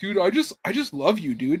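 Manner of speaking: put-on syrupy, gushing, over-earnest bro voice. Retelling how all these guys talk, mocking imitation of gushing guys. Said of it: "all these guys are just like".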